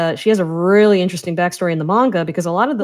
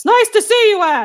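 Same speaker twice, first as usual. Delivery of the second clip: put-on yelling voice, higher pitch. Imitating how the voice actor always delivered Brandon's lines: imitating Brandon yelling. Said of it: "He was just always yelling".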